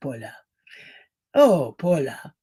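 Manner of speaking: low, heavy classic movie villain line reading. Describing a favorite actor from Gaslight: imitating the Gaslight actor. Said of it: "he talks like this".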